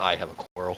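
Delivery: mumbled under one's breath. Muttering a quip in character during a tense standoff: muttering under breath. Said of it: "I'm kinda under my breath like".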